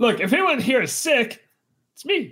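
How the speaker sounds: full-on shrill yelling. Joining the episode's running bit where everyone keeps shouting, shouting. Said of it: "well stop shouting".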